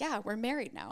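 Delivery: affronted, indignant, put-out tone. Retelling what Chase said on the honeymoon: imitating Chase, indignant. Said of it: "And that's how he said it".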